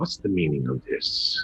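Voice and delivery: low, swooping creature voice. Voicing a mind flayer who speaks into a player's mind: mind flayer voice. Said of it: "you hear it in your mind".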